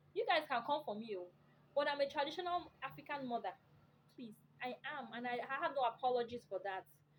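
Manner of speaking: ordinary talk, nothing marked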